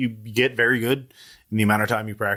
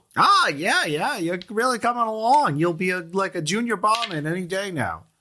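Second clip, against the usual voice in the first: high-pitched bugbear creature voice; 8 semitones higher than usual. Voicing a bugbear praising a trainee barman, in a high-pitched bugbear voice. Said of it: "a bugbear with a high pitched voice".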